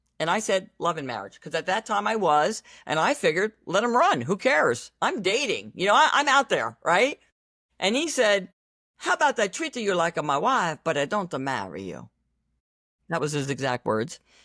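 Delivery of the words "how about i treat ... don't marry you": strong put-on Italian accent. Retelling what a man said to the speaker while dating, in a heavy Italian accent. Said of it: "he's very heavy Italian accent".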